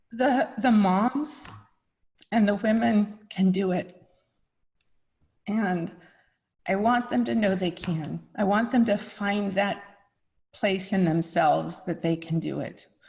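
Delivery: heartfelt, moved voice, overcome with feeling. Answering a hard question, the speaker is getting emotional. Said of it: "I don't know why I'm getting so emotional".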